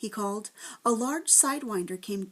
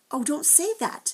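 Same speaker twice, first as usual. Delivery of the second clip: high, desperate, pleading, begging outburst; 6 semitones higher than usual. Narrator reading Ben answering the Proc, a desperate cry. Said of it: "Ben cried desperately".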